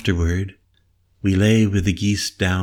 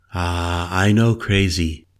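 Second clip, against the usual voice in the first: ordinary delivery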